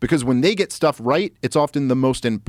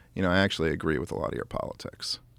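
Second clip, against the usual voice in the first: confiding, hushed, low whisper under the breath; 8 semitones lower, 10 dB quieter than usual. Retelling a college professor leaning in after dinner, imitating a low whisper. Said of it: "in a low voice he goes".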